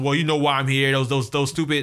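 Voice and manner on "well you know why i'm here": ordinary talk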